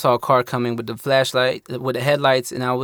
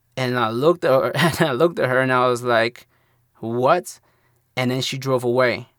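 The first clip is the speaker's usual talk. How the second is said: ordinary talk, nothing marked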